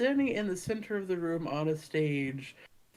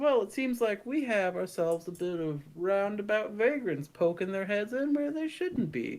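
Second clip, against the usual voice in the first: put-on southern accent, calling out, projected; 3 semitones higher than usual. Performing a character in a burlesque show, calling out to the audience in a southern accent. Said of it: "I've been doing a southern voice".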